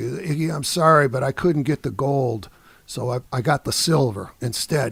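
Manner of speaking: usual speaking voice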